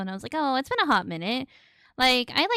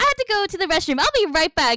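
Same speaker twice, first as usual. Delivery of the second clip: put-on hyped-up energetic chatter, very high and loud; 10 semitones higher, 6 dB louder than usual. Imitating a high-energy YouTuber leaving to use the restroom: imitating Jack, high energy. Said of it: "But then he'd be like".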